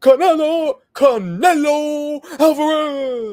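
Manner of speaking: very high, loud, drawn-out announcer call, last word fading. Retelling how a ring announcer fades the last name: imitating Michael Buffer. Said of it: "go up and then fade into the last name".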